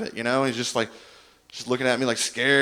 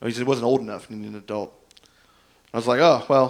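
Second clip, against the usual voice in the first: ordinary delivery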